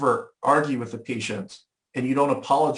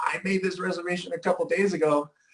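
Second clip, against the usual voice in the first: put-on indignant, angry, pitched-up voice; 5 semitones higher, 4 dB quieter than usual. Retelling own words to a hotel about a lost reservation: retelling own angry words. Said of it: "I'm so mad".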